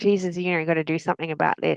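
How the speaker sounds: ordinary talk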